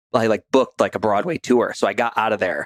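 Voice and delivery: ordinary talk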